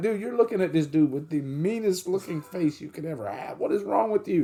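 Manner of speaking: high voice, talking through bursts of laughter. Retelling what a mom told her staring son: imitating laughing while talking. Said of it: "'cause she's laughing like".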